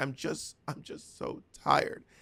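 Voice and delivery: hushed, slow, breathy, weepy murmur through tears. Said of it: "crying, saying".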